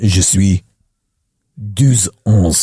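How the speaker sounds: put-on deep kid voice. Mimicking a twelve-year-old french boy introducing himself, imitating a deep-voiced french kid. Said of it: "you've got a voice that deep".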